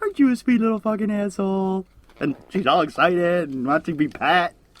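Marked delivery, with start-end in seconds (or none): 0.0-1.9 mock sugary, uplifting coo, pitched up. Retelling what she says to her dog, in a mock-sweet cooing voice. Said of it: "I can say it in like the sweetest upli- uplifting voice".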